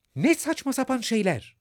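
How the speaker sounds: loud, yelled-out outburst. Narrator reads a character retorting to the queen's ruling in court, shouted. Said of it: "diye bağırdı Alice".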